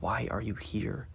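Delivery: soft, breathy, hushed whisper. Reading a story aloud, a character asks someone quietly: whispering. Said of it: "whispering to her".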